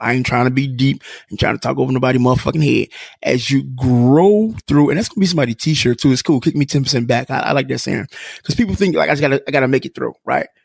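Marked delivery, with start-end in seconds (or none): 3.2-4.9 very slow, deliberate, stretched-out, drawn-out phrasing. A speaker repeats his own saying to listeners, saying it slowly. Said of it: "I'm gonna say that slow".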